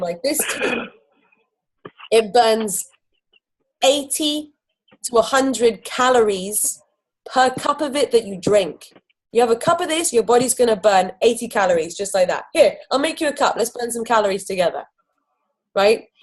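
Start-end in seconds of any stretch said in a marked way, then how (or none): 0.2-8.9 very slow, deliberate, drawn out word by word. Showing how the speaker always describes this tea, said really slowly. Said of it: "I always say it really slowly".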